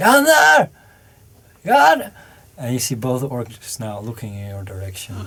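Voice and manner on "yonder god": shrill, high-pitched yelling at full volume. Narrating a tabletop game, voicing an orc who suddenly starts shouting in Orcish. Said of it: "just starts shouting in Orcish".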